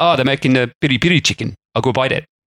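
put-on clumsy, inaccurate South African accent. Speaker acting out what Fernando said about the restaurant: Fernando in bad South African accent. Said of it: "He wouldn't have sounded like that because he's not from South Africa".

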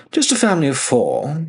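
high, chirpy, chirped little words. Narrator reading Elsher's reply to Fessaline's question, chirped. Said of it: "Elsher chirped".

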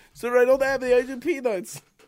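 shoddy put-on German accent, very high. Retelling what a man said, the speaker does the shittiest german accent. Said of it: "The shittiest German accent".

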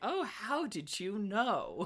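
soft, lighthearted, very slow sarcastic tone. Acting out what they would say back to her, mock lighthearted sarcasm. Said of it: "like lightheartedly sarcastic".

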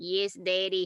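mock creepy, dead-inside little girl voice. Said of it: "dead on the inside".

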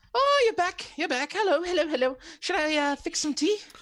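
very high, loud, eager gushing. Voicing Jenna greeting the returning party and offering tea: voicing Jenna. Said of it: "She goes".

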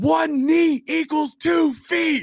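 acted top-of-the-lungs holler, very high and drawn-out. Retelling seeing a replay in the stadium hallway: imitating his own yell. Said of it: "I yell on the top of my lungs".

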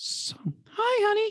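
high, mock sitcom-mother voice.

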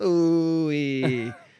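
slightly deep, cartoony voice. Comparing a new actor's take on a character, mimicking it in a slightly deep Mr. Poopy Butthole voice. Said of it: "you can tell it's like a little bit deep".

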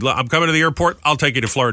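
usual speaking voice

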